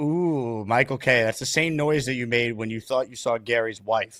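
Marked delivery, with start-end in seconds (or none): 0.0-1.2 insinuating, knowing, suggestive tone with ooh. Mimicking how the other speaker said the name: imitating Bobby's innuendo tone. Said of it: "I like how you do the".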